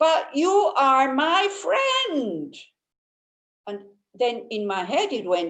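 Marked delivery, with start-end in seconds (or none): 0.0-2.5 put-on high, drawn-out, indignant, outraged scream. Retelling a disappointed friend's complaint: imitating someone screaming. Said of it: "outrageously was screaming at me".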